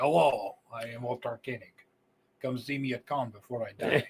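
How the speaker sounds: poor imitation Russian accent. Imitating Walter Koenig as a cast member, with a bad Russian accent. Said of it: "I can't do a proper Russian accent".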